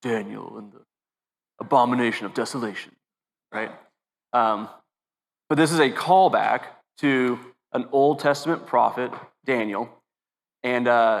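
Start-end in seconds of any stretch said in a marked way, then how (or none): 0.0-2.9 movie trailer announcer voice. Deciding to read a line aloud in the movie trailer voice. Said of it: "I should read that in the in the movie trailer voice".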